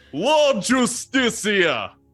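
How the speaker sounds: very high, booming, commanding official voice. Playing an authority figure from Kaladesh in a scene: booming authoritative voice. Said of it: "cause my voice to boom, and I'm gonna do this like my best impression of like an authority".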